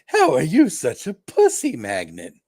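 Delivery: high, big, cartoonish, swooping voice. Imagining a scene between comic characters, the speaker does the Carnage voice. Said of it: "I could tell by that voice that you were doing the uh, nineties cartoon uh".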